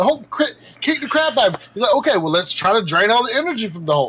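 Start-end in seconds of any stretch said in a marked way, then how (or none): none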